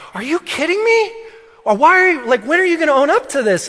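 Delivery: shrill, very high, exasperated, fed-up voice. Retelling a mother confronting a daughter who denies hitting: imitating exasperated wife. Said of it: "My wife is now exasperated and is like".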